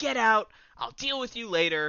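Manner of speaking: put-on furious outburst. Acting out Sean telling someone to leave: imitating someone going off angrily. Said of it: "Sean just goes off".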